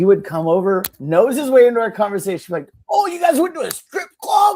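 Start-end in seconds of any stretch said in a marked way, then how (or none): 2.9-4.6 very high-pitched, loud, blurted shout. Telling about a man at the office, imitating him shouting. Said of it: "shout it in front of the whole fucking office".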